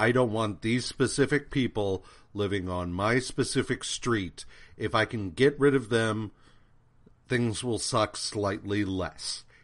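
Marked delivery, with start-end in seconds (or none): none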